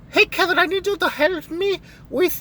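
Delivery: very high invented put-on voice. Act out a friend asking kevin for help, in a made-up voice for a friend. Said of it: "this is the voice I'm giving her".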